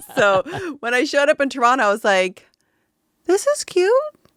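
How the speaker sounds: talking through laughter, high and loud. Recalling arriving in Toronto after living in London: laughing while talking.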